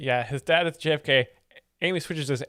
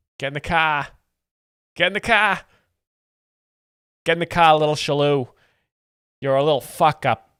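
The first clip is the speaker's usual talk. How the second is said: put-on Boston accent; 6 dB louder than usual. Speaker imitates a father ordering the kids into the car: put-on Boston accent. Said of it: "That was an accent".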